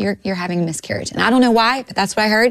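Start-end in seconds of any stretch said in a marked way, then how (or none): 0.0-1.1 very soft speech, much quieter than before. Recounting what he told the speaker, very softly. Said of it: "he just said very softly".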